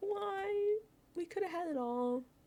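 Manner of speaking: very high, acted, anguished scream, drawn-out "why". Recounting watching a player carry the wrong piece past the key, retelling a scream. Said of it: "The way I was screaming".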